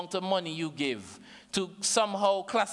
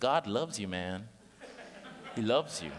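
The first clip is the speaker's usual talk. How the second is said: put-on American accent, low; 6 semitones lower, 4 dB quieter than usual. Telling the audience that God loves them; American accent. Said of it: "I say it in American accent".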